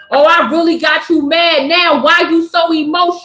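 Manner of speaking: put-on mocking, taunting voice. Acting out the fools who taunt someone for crying: imitating someone taunting. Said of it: "what do these fools do to you when you start crying".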